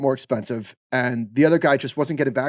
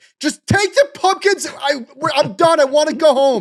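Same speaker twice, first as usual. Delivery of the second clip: very high, stretched-out, drawn-out yelling; 14 semitones higher, 4 dB louder than usual. Retelling being done with pumpkin farms: imitating own yelling. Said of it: "I'm yelling around".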